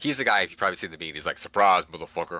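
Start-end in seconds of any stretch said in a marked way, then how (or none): 1.4-2.4 loud, gruff, hard-hit taunting delivery. Quoting a detective's famous meme line: imitating Detective Doakes. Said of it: "if you remember the character, the, uh, Detective Dokes".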